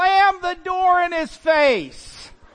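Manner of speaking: shrill, high, loud yell shouted from afar. Retelling a voice from the back of the house, imitating someone yelling. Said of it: "I hear the voice yell".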